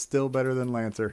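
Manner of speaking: ordinary delivery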